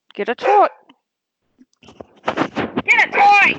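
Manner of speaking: very high, slow, drawn-out yelling. Speaker talking about training her dog, yelling at the dog. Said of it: "if I don't yell".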